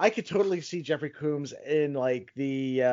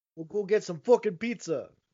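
put-on New Yorker accent, high-pitched; 6 semitones higher than usual. Offering someone new york accent lessons, in a new york accent. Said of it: "I can give you New York accent lessons".

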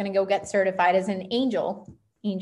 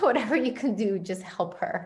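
terrified, acted-out, begging plea. Retelling calling a Reiki master in a panic: retelling her own begging. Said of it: "and just begging her".

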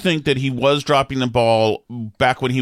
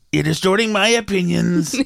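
pitched-up, formal, official spokesperson-style voice; 6 semitones higher than usual. Doing a press secretary impression for the other speaker: imitating a press secretary. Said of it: "my whole press secretary thing will be being my impression".

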